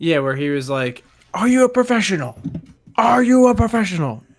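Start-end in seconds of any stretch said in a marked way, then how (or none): 1.3-4.2 very high, shrill, loud yelling. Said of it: "yelling on the set".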